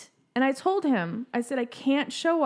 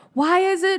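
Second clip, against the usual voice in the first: mock childlike loud stage whisper, higher; 6 semitones higher, 7 dB louder than usual. Retelling how a kid in the movies asks questions: imitating a kid's loud whisper. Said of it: "but like a whisper".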